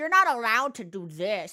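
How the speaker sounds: put-on unpleasant voice. Showing the voice that comes out in certain things: vaguely distasteful person voice. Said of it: "a vaguely distasteful person, I think is, is what that voice conjures".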